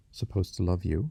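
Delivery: ordinary delivery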